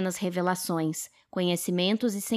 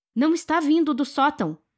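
yelled out at full force, high and loud; 8 semitones higher, 6 dB louder than usual. With explosions going off outside, Henry shouts to the woman: shouted. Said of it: "gritou Henry".

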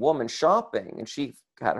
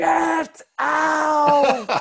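put-on high shrill shriek, out drawn long; 5 dB louder than usual. Retelling a grocery store matriarch's outburst, imitating someone screaming. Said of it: "I'm talking 10 out of 10 screaming".

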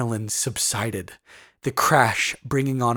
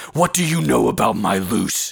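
harsh, rough-edged delivery; 4 dB louder than usual. A man answers a woman who urged him to keep the place alive, harshly. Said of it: "Brom replied harshly".

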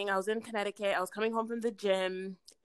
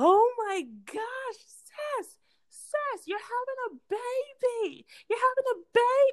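mock very high, thrilled shouting outburst, swooping. Retelling the moment a sister shared pregnancy news: imitating own excited shouting. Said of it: "I was so excited".

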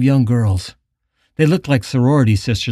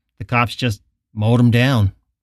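plain reading voice

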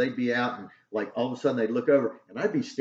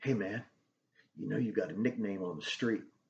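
low, husky woman's voice, much quieter; 3 semitones lower, 9 dB quieter than usual. Retelling what a woman working in Vice and Narcotics said to him, low husky voice. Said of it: "She's got this real low husky voice".

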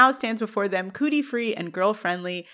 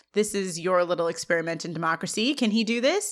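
ordinary talk

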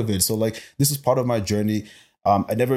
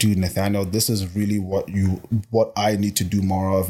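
ordinary delivery

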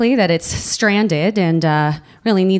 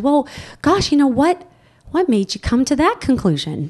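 put-on big, pitched-up voice for small children; 5 semitones higher than usual. Retelling what Harmon asked him, imitating Harmon's kindergarten voice. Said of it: "gives me this sort of big kindergarten".

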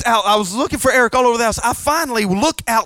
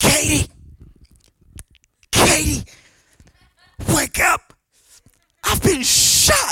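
very slow, raspy, pitched-up voice; 5 semitones higher than usual. Retelling a friend waking his wife from a dream: imitating a raspy voice. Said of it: "he was speaking with a raspy voice".

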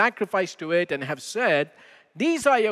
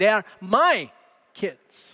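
my carries the strongest stress; 2 semitones higher than usual. Quoting what my wife says when the kids get complimented: stress on my. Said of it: "the emphasis is on the word "my."".

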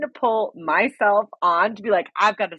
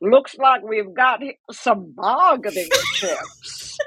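put-on grizzled old prospector voice. Retelling a line someone said in a new character: old prospector voice. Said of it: "Says it like an old proc".

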